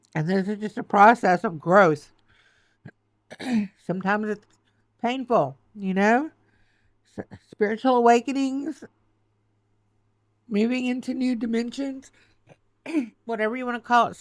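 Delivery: tearful, choked-up voice breaking, close to crying. Reassuring listeners while admitting she is getting emotional; choked up. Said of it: "I'm getting really choked up here".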